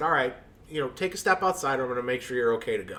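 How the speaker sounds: ordinary delivery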